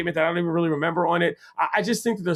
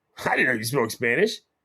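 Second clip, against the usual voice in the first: teasing, mocking tone; 6 semitones lower than usual. Retelling how DeRosa answered a player who replied in Spanish: imitating DeRosa saying it mockingly. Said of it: "mockingly said".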